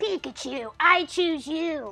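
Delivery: poorly done, high anime hero voice. Doing an Ash Ketchum impression a viewer asked for: bad Ash Ketchum impression. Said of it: "A good Ash impression?".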